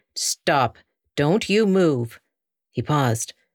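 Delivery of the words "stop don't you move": severe, stern, slow voice. A voice orders Rye not to move toward the horse, stern. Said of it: "the stern voice said".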